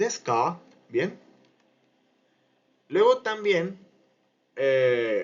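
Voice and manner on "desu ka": question-like tune, pitch rising on ka. Japanese lesson taught in Spanish, asking a question: rising pitch on ka. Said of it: "el tono ascendente en K".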